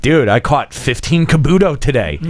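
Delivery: ordinary delivery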